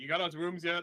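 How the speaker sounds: yelling, very loud. Calling over to another character in a game, asking about rooms: yelling over. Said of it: "I'm gonna yell over at Tony".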